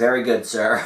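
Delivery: put-on dry deadpan voice. Imitating the secretary's reply to her boss: imitating Secretary Daria's dry deadpan. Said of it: "She said the most dry, deadpan".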